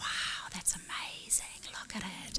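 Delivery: soft, awed whisper. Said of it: "were whispering".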